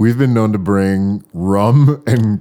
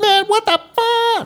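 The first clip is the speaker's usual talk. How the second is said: very high, dragged-out, drawn-out exclamation. Retelling a friend's reaction at a party: imitating a friend. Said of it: "That's my impression of you".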